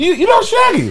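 mock, boastful, bragging voice.

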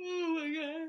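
very high, loud yawn through the words. Podcast host, feeling at home recording an episode, speaks while yawning. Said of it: "I'm straight up yawning right now".

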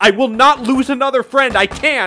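shrill shocked very high scream. Retelling a comic scene where one character screams at her friend: retelling a scream. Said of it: "screams at Tangle".

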